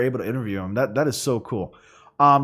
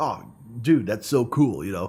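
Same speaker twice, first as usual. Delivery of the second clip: casual, down-to-earth, easy, unguarded chatty voice; 3 semitones lower, 4 dB quieter than usual. Imitating how a voice actor talks in person: Christopher Sabat impression. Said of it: "I was trying to do an impression of Christopher Sabat".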